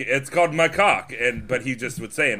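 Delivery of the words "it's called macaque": put-on Boston accent. Imitating the man who named the macaque: imitating a Boston accent. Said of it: "he had a Boston accent".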